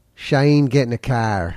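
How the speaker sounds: put-on Australian accent. Teaching how to do an accent with a practice phrase: australian accent. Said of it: "If you want to do a good Australian accent".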